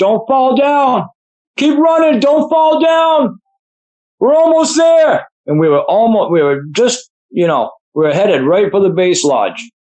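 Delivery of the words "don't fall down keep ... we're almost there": play-acted shrill, high, urgent shouting. Running down a mountain, the speaker retells shouting at the other runner, retelling one's own yell. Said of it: "I just kept yelling at him".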